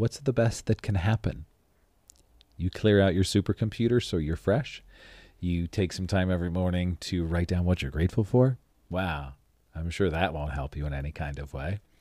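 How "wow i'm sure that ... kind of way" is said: super sarcastic, heavy irony. Recommending writing down gratitude each morning, then adding: super sarcastic. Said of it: "I'm being super sarcastic".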